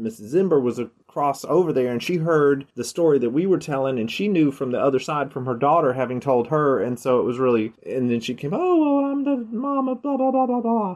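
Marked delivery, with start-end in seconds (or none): 8.5-11.0 very high-pitched voice. Retelling what a mother said when she came over: Missus Zimber impression. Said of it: "That's my Missus Zimber impression".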